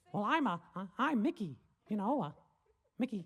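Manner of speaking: very high, loud, swooping voice. Retelling a cartoon where the character tries to impress a bear: Mickey Mouse voice. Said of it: "He's like".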